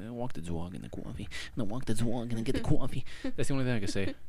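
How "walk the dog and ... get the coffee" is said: clumsy, bad put-on New York accent. Speaker admits she can't do a New York accent, then tries: bad New York accent. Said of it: "I can't do a New York accent".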